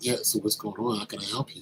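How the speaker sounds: put-on soft, cool, calm, laid-back, easygoing tone. Retelling a meeting, quoting the cool-as-a-cucumber guy: imitating a very cool, calm guy. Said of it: "This is the way he's talking to me".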